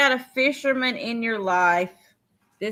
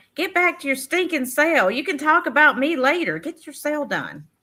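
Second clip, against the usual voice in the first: pitched-up, affectionate mock-scolding yell; 5 semitones higher than usual. Voicing what Tammy Renee would yell at the speaker right now; imitating Tammy Renee's loving yell. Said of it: "She would yell at me with love".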